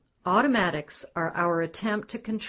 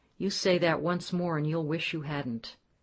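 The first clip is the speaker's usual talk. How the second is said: ordinary talk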